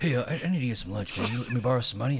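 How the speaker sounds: odd, weird rasp over every word. Imitating a coworker who kept asking to borrow money, in a weird raspy voice. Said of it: "he was a weird raspy voice".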